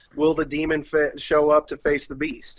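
normal talking voice

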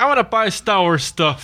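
ordinary talk, nothing marked

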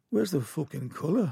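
attempted, put-on Liverpool Scouse accent. Retelling what a man said to John, in a put-on Scouse accent. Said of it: "I'm trying to do a Scouse accent here".

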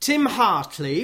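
name pronounced the Welsh way, Welsh accent. Introducing an author because the audience is in Cardiff, Welsh accent. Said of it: "I have to say in a Welsh accent".

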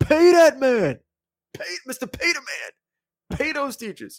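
high, drawn-out, belted hype shout. Retelling a sports analyst's catchphrase on game day: imitating Deion Sanders shouting. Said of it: "he'd go".

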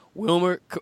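voice cracking. Announcing the name of a new head coach, voice cracking. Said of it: "my voice just cracked right there".

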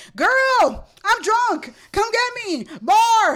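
booming, very loud, very slow, very high, drawn-out voice. Retelling a friend's phone call: imitating a loud friend on the phone. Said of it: "really loud on the phone".

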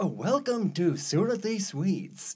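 over-exaggerated, swooping radio-ad announcer voiceover. Recalling a Sunday-morning radio station, imitating its commercial announcer's over-exaggerated voice. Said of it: "this unmistakable voice of, like, this guy who would do the commercials".

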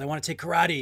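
imitated excited voice. Retelling a scene where a boy asks his mom about karate: imitating someone excited. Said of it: "he's all excited".

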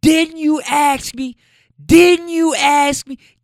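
play-acted, very high, drawn-out shrieking. Retelling a woman screaming at a man about putting the baby up: retelling a scream. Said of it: "And she's screaming".

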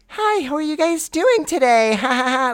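very high, creepy, childlike cartoon voice. Retelling what an Uber driver said: imitating a childlike creepy cartoon voice. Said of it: "she talked in a very, like ... little kiddish, but, like, creepy cartoon".

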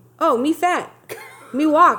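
mock condescending speech. Retelling how she talks to him like he's an idiot: imitating talking down to someone. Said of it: "are you Jar Jar Binks?".

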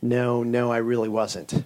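acted, slow, guilty, sheepish tone. Telling a joke, acting out Joe answering St. Peter, imitating a sheepish reply. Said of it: "he kind of sheepishly looks up and he's like".

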